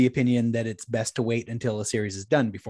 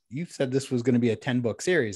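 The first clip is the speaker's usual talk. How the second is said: plain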